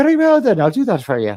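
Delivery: put-on melodic Northern Irish accent. Imagining Liam Neeson's reply to a request to change his voice: Liam Neeson impression, lyrical Northern Irish accent. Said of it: "that lyrical, like, Northern Irish accent".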